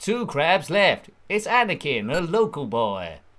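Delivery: slowed-down announcer voice. Playing a game and counting down the remaining crabs, in a Greg Proops pod race announcer voice. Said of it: "I sound like that announcer in the Phantom Menace on the pod racers".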